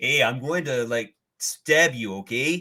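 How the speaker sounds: put-on Canadian accent. Imagining the MCU Wolverine threatening someone: Wolverine with Canadian accent. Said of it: "I want to see the M C U Wolverine do a Canadian accent. Just".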